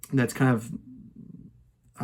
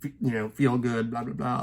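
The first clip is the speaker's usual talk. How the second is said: mocking, dismissive voice. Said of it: "some people just are very dismissive and say".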